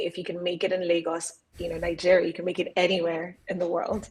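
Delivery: ordinary delivery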